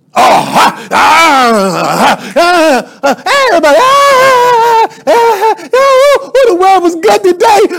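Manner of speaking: very high-pitched, very slow, swooping preacher voice. Mocking how preachers change their voice when preaching: imitating a preacher's put-on preaching voice. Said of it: "why do you gotta change your voice when you preaching".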